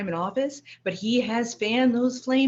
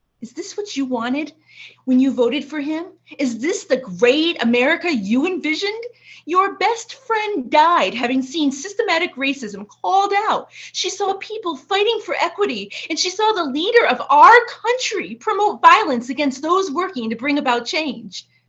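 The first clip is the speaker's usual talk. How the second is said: openly angry, raised, pitched-up voice; 5 semitones higher, 6 dB louder than usual. Speaking to Mama, who has died, about the past; angry. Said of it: "if I sound angry at you".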